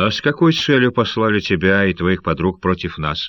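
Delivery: ordinary delivery, nothing marked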